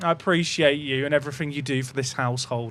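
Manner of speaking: unconvincing, insincere. Thanking a YouTube chat viewer for five gifted, sounding insincere. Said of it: "That sounds really insincere".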